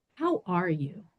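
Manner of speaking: soft, pointed, mock purposeful tone. Retelling her doctor's question at a well woman visit, imitating a purposeful doctor. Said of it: "in this like really like purposeful way".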